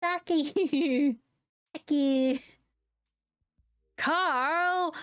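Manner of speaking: put-on very cute anime girl voice, very slow. Voicing a character yelling at another character, the speaker uses a cute little anime girl voice. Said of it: "just the cutest little anime girl voice".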